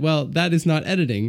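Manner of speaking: ordinary delivery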